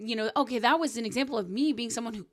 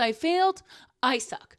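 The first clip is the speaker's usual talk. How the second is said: usual speaking voice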